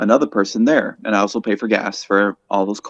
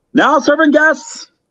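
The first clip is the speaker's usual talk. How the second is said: very high, full-lung, top-of-lungs shout; 6 dB louder than usual. Showing the voice used for calling out orders at McDonald's, shouting at top of lungs. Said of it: "I shout at the top of my lungs".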